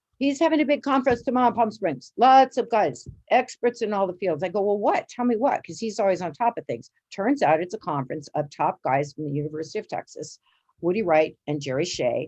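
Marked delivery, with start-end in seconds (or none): 0.2-4.4 bad, amateurish put-on Chinese accent, pitched up. Quoting a physician's reply about Edmund, in a bad Chinese accent. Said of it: "pardon my bad Chinese accent".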